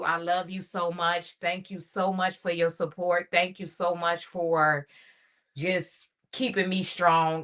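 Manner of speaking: emotional, teary-edged voice on the verge of tears. Daughter wishing her mother happy Mother's Day to the world, about to cry. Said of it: "I'm about to cry now".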